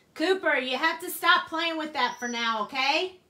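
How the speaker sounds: high-pitched, very loud shout. Speaker yells for someone to stop playing with a squeaky toy: yelling. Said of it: "I didn't mean to yell in you guys' ears".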